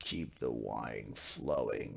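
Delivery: very deep, very hushed, drawn-out, rough growl. After chugging a pitcher of wine, he looks over at him, growling voice. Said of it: "in a growling voice".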